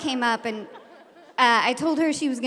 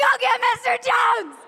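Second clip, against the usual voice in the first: very high, piercing, shrieked scream; 11 semitones higher, 3 dB louder than usual. Retelling holding back one of two people fighting: retelling a scream. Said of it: "And I screamed".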